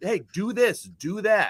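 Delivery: put-on coach-style screaming, high and slow. Picturing a catcher screaming orders at a player: imitating A.J. screaming. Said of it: "had a A J screaming at him".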